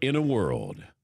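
movie trailer announcer voiceover narration. Speaker who always wanted to do movie promos tries one: movie trailer announcer voice. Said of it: "I always wanted to do those movie promos".

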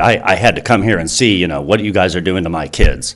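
normal talking voice

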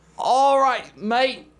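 put-on awful Australian accent. Starting a conversation game in an australian accent: awful australian accent. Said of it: "That's awful".

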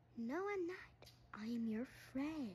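very soft, hushed teddy bear voice. Acting out a skit, voicing a teddy bear that comes alive: talking teddy bear voice. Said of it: "but you're my teddy bear".

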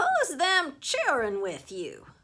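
loud, high-pitched, insistent, pushy tone. Narrator reads the old woman questioning Grandma about the kids: demanding. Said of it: "she demanded of Grandma".

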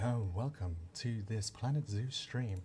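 deep radio announcer voice. Trying out a lowered british radio voice: british radio presenter voice. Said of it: "I'll give it a go".

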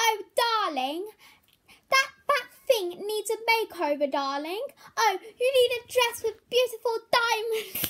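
very high-pitched put-on voice. Doing a run of cartoon voice impressions for viewers, now a Rarity voice. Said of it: "Now Rarity".

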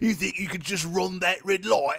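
very high, loud brute voice. Imagining a navigation voice as a Warhammer orc: Warhammer 40K orc voice. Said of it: "it to be a orc from Warhammer forty K".

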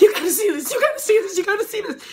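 acted-out panicked, urgent repeating, very high and loud. Retelling a guest rushing up to the front desk: imitating a frantic woman. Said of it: "tapping frantically".

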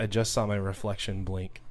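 ordinary delivery

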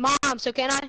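calling out loudly, high-pitched.

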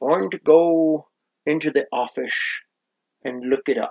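put-on Scottish accent. Saying they'll look prices up in the office: Sean Connery voice. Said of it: "Thank you, Sean Connery".

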